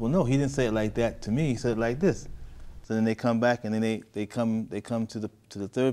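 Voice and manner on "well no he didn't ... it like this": ordinary delivery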